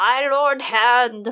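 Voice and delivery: very loud, stiff, formal-sounding pronouncement. Reading the scene aloud, Pycelle addresses the Hand: Pycelle's stiff voice. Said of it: "Pycelle declared in a stiff voice".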